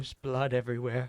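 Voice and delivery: creepy, horrifying put-on old woman voice. Retelling what a customer said: imitating a horrifying old woman's voice. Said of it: "the voice that you just used was horrifying".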